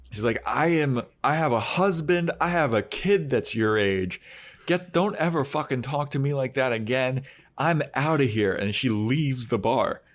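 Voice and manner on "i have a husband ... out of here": much higher mock scream in a woman's voice. Retelling a woman's outburst at a man in a bar, imitating a woman screaming. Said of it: "she's screaming".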